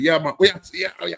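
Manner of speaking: loud, high-pitched, code-switched casual banter.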